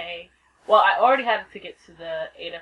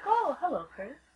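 put-on very quiet, super-cool casual delivery; 8 semitones higher, 8 dB quieter than usual. Planning how to greet chris again, acting super cool. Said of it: "act like super cool and be like".

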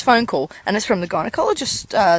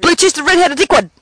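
as fast as possible, rapid-fire, higher pitch; 6 semitones higher, 4 dB louder than usual. Asked by a friend to say a phrase as fast as possible. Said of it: "you say it as fast as".

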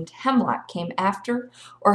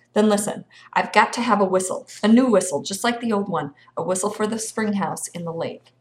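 usual speaking voice

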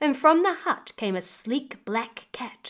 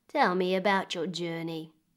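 plain reading voice

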